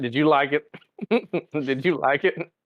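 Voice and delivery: giggling, laughing through words, barely getting them out. Asking another speaker whether they liked the season, laughing while talking. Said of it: "I can't say it without laughing".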